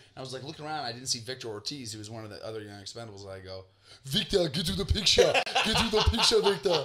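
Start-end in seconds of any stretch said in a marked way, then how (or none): 4.1-6.9 put-on poor Austrian accent, pitched up. Calling Victor over to the picture, in a bad Arnold Schwarzenegger accent. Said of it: "Like a bad Arnold Schwarzenegger".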